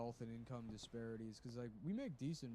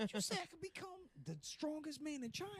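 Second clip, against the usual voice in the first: very high, dazed, concussed-sounding voice. Quoting a dubbed movie line: Martin Lawrence concussion voice. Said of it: "doing the concussion voice".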